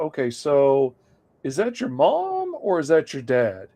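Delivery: mock-gentle, careful and tactful put-on tone. The speaker recalls questioning a kid years ago, imitating a gentle careful tone. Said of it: "I was trying to be ginger about it".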